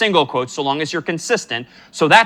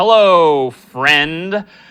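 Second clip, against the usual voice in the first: mock sarcastic tone, louder; 5 dB louder than usual. Giving an example greeting to print in code: put-on sarcastic tone. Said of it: "maybe I'm being a little sarcastic here".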